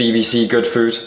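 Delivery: ordinary delivery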